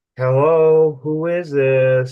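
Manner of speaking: very slow, airy, spooky, disembodied voice. Retelling a strange voice heard over their set: imitating an airy disembodied voice. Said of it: "it sounded, like, airy".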